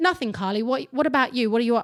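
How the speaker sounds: voice-assistant style English male voice. Retelling his voice-activated chat's reply while driving, in an English male voice. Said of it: "mine's an English male".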